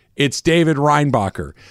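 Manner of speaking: ordinary talk, nothing marked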